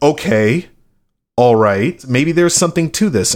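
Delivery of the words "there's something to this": ordinary talk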